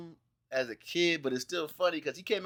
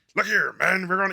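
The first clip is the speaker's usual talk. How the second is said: rough mock military commander voice; 3 semitones higher, 8 dB louder than usual. Imitating George C. Scott playing Patton: gruff George C. Scott impression. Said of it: "real gruff".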